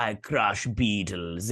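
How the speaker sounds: put-on Russian accent. Speaker imagines what the comic character would say, in a put-on Russian accent. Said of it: "I don't know why I gave him a Russian accent".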